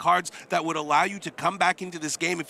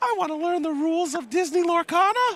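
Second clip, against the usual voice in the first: put-on tiny, very high-pitched small-child voice; 12 semitones higher than usual. Speaker acting out Arthur's words to a co-host, impression of Arthur. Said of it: "That was me doing an impression of Arthur".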